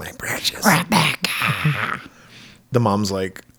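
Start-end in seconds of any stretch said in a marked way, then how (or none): 0.0-2.0 whispered slowly and breathily. Retelling a movie scene, quoting the villain Diana: Gollum voice. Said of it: "Diana talks like Gollum".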